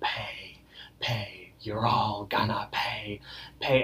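hushed, slow, very drawn-out whisper. Retelling a cartoon scene as the wizard: imitating a whisper. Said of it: "the wizard is whispering".

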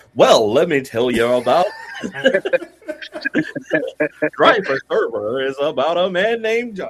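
loud, booming sales-pitch radio announcer voice.

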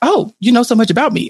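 ordinary talk

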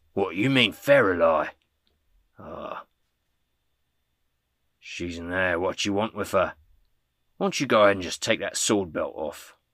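wary, distrustful, challenging, suspicious tone. Voicing a guard who glares at an intruder: glaring guard. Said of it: "kinda glares at her and says".

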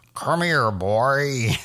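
old-style cartoon dad voice, word boy drawn out. Show your Mike Mitchell version of the character, in an old first-season Homer voice. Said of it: "my Mike Mitchell version of the Homer".

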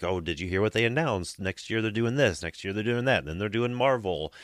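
ordinary talk, nothing marked

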